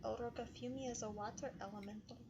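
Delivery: whispered, quiet aside. Playing a game character, whispering into another character's ear: whispering. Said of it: "I'm going to whisper into El Roca's ear".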